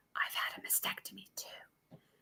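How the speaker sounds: barely-there, hushed, very quiet whisper. Speaker retells what a woman whispered after coming into the office: retelling a whisper. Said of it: "she whispers to me".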